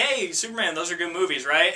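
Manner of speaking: normal talking voice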